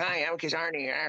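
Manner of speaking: voice going way up into chipmunk range. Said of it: "I sound like Alvin and the Chipmunks".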